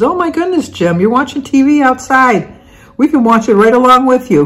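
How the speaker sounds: high, cheery, sweet call, called out. Retelling what the next door neighbor called over the fence: imitating a neighbor yelling. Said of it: "kinda yelled over the fence".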